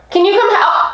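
high-pitched voice breaking and cracking. Calling someone to come help make the bed: voice cracking. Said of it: "My voice cracked".

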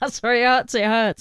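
breathless voice, words gasped out between laughs. Describing how the cartoon character laughs, the speaker acts it out: imitating Muttley's breathless laugh. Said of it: "He laughs really breathlessly".

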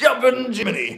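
very high, cartoon-character squealing voice. Imagining a viewer demanding the butcher block go: Yosemite Sam voice. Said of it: "Yosemite Sam or something".

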